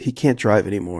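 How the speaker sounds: ordinary delivery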